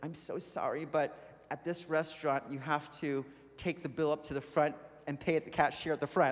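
ordinary delivery

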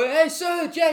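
put-on high yell. Imagining Maguire confronting Ramos, the speaker imitates Maguire yelling. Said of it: "Maguire's gonna yell".

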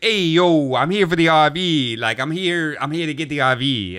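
imitated Italian New York accent. Retelling a man who showed up in the driveway for the RV: Italian New Yorker caricature. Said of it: "most like Italian New Yorker caricature".

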